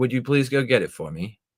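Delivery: polite, courteous, respectful tone. Explaining how to tell people what to do, the speaker demonstrates a polite request. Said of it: "say it in a respectful way".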